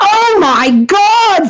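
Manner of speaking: play-acted very high-pitched yell. Telling a joke, the speaker voices the lawyer's line, retelling a yell. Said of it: "And he yells out".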